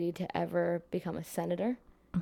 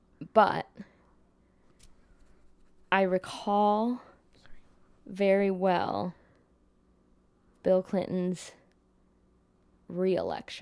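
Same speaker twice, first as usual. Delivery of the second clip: slow, halting, hesitant, searching-for-words delivery; 4 dB louder than usual. Recalling Bill Clinton's re-election while trying to remember, speaking slowly. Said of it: "I'm saying it slowly because I'm trying to remember".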